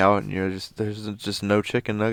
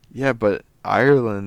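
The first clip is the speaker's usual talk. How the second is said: normal talking voice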